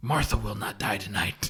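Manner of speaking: very low, dead-serious, solemn delivery. Retelling a movie scene where Batman promises Superman: very serious Batman line. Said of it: "dead in the eyes and very seriously promises him".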